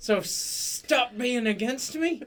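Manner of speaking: shouting. Arguing with a companion about resting: yelling. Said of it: "Quit yelling".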